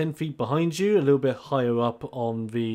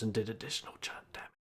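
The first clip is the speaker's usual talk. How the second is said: fast whisper. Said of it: "What are we whispering about?".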